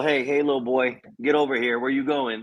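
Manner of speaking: father-like voice. Acting out a horse-collar tackle: like a father would say it. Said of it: "Said like a father would say".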